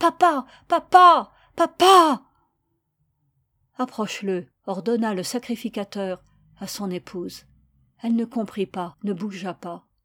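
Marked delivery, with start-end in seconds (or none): 0.0-2.2 repeated high, loud, shrieking screaming yell. A boy struggling to break free of his mother cries for his father: screaming. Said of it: "en hurlant".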